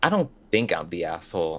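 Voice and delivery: put-on snide, entitled, sing-song sarcastic mean-girl tone. Quoting how a poster opened her story: imitating a sarcastic mean girl. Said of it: "it sounds like somebody who's, like, sarcastic, like a mean girl would say it".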